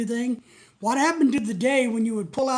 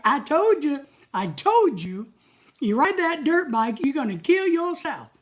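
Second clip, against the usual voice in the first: put-on mocking laughter, scolding tone, higher; 4 semitones higher than usual. Imagining a girlfriend scolding a dirt bike rider: imitating someone laughing at you. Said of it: "sitting there laughing at you like".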